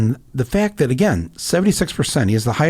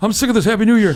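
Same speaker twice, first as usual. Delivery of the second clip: high-pitched, loud, complaining grumble. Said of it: "Larry David was going".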